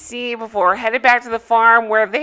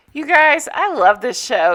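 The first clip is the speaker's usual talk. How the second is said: gleeful, excited delivery. A podcast host introduces the show being covered, gleeful. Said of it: "Can you hear the glee in my voice?".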